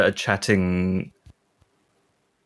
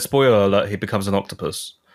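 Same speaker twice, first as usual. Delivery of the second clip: ordinary talk, nothing marked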